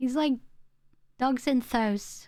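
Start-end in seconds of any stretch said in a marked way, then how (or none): 1.2-2.3 put-on mimicked northern English accent. Speaker shows how their dad says house, imitating dad's northern dialect. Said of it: "my dad talks like that".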